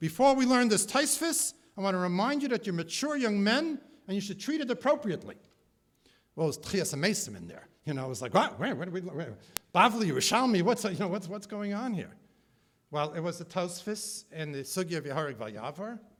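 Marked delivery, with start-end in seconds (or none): 0.0-5.4 big, loud booming voice filling the room. Retelling a class in the old college building, the speaker imitates his booming voice. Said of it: "with his booming voice".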